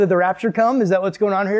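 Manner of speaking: ordinary talk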